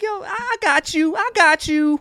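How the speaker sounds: faked Southern American woman's voice.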